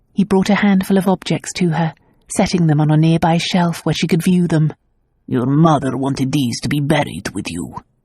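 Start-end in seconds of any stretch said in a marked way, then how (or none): 5.3-7.8 gruff, low-pitched delivery. Reading fiction aloud, a character offering keepsakes: gruff voice. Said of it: "he said gruffly".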